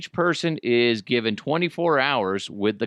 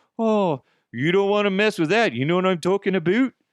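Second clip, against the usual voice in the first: bad, fake, put-on Canadian accent; 7 semitones higher than usual. Quoting what a hockey nerd said about bad luck, bad Canadian accent. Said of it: "That was kind of a crappy Canadian accent".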